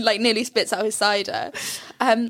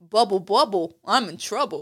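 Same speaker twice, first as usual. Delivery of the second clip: mock, put-on New York accent; 2 semitones lower than usual. Quoting a sporting character's great line, in a New York accent. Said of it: "Why is he from New York?".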